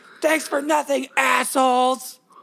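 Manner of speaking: play-acted, very high, slow, drawn-out yell. Retelling how the lady yelled as they left: imitating someone yelling. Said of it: "the lady yelled at us".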